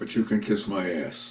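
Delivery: hushed, whispered mutter under the breath. Retelling what a man said after agreeing to a request, retelling a whisper under breath. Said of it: "he whispered under his breath".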